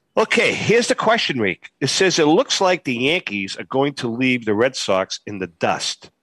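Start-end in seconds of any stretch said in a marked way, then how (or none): none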